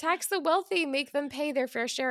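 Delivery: loud, high shouting. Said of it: "Democrats have been shouting".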